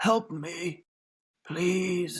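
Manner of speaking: whispering hoarsely. Game master voices a man who turns to the players, in a hoarse whisper. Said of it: "He whispers hoarsely".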